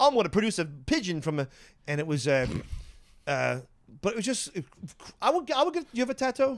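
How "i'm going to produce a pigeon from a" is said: deliberately fake put-on British accent. Retelling a rock and roll magician's act: imitating a fake British accent. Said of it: "he was put on a fake British accent".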